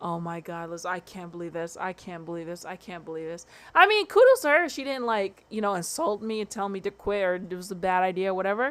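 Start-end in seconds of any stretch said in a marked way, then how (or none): 0.0-3.5 put-on scared disbelief, much quieter. Retelling how a woman reacted to the speaker's dangerous job, imitating scared disbelief. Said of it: "she was definitely freaking scared".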